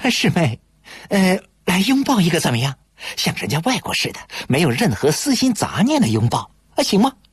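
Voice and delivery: playful wheedling. Parting at the dorm door, he asks his junior schoolmate, grinning cheekily, pleading. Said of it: "亚历坤嬉皮笑脸地张开手臂请求道".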